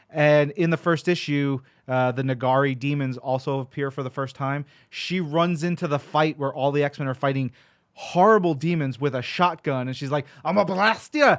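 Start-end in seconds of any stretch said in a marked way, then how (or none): 10.4-11.3 loud, high, put-on Scottish brogue. Describing a comic-book character charging into a fight, in a scottish brogue. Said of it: "she's got this Scottish brogue".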